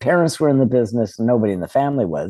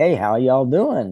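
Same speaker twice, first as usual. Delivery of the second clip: put-on Southern US drawl; 4 semitones higher than usual. Recalling coming home from summers visiting grandma in the South, put-on Southern accent. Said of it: "I was picking up that accent from my mom".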